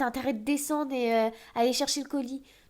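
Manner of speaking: loud, yelled voice.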